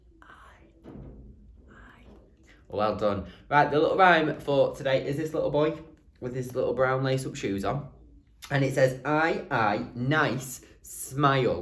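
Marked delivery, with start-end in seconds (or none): 0.2-2.0 hushed, very quiet whispered vowel. Leading listeners in repeating a sound, the speaker says it very quiet. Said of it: "Really quietly".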